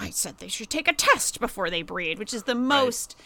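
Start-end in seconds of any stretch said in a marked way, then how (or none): 0.0-2.2 mock muttering under the breath. Describing Toni Collette's performance at a family Christmas, imitating Toni Collette muttering. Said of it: "under her breath is like".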